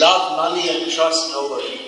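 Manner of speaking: plain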